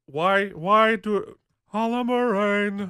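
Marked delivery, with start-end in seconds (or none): 1.8-2.9 weird put-on sing-song voice, higher. Retelling how a line was delivered in a scene: Avery Brooks sing-song voice. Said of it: "in this weird, like, sing-song voice".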